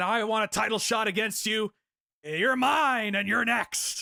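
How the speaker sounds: put-on Georgian accent laid on heavily. Quoting a promo demanding a title shot: Bill Goldberg's thick Georgian accent. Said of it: "thick Georgian accent saying that".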